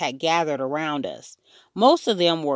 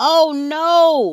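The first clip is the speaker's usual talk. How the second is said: loud shrieking scream with long, drawn-out no; 10 semitones higher, 7 dB louder than usual. [name] reacts to hearing that Fudgy's front teeth are gone; screaming. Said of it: "[name] screamed".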